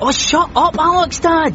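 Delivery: put-on snapped out high, in a snappish teenage tone.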